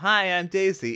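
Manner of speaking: very high, loud, popped-out exclamation. Quoting game voice lines heard in the movie: imitating Princess Daisy voice line. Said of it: "you know".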